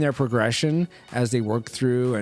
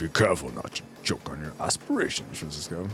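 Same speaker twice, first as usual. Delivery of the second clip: movie-villain voice, lower and quieter; 7 semitones lower, 6 dB quieter than usual. Reading out a viewer's comment in a Darth Vader voice. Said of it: "in my best Darth Vader voice".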